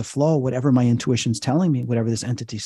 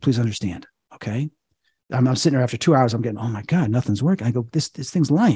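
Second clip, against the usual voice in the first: ordinary delivery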